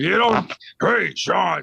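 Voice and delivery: put-on gruff, grumpy, angry voice. Doing another person's voice on request, put-on gruff voice. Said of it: "Please do the voice again. ... Like angry Santa. ... You do my voice better than I do my voice".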